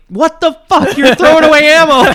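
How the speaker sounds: shrill, very high, loud yelling. Retelling how a friend's dad yelled at the range: imitating someone yelling. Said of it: "your dad's yelling at me like".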